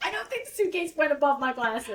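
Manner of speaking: laughing, giggles bubbling over.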